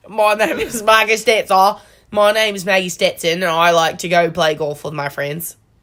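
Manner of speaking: put-on Australian accent. Trying out an accent and introducing yourself in a put-on Australian accent. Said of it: "Was that good?".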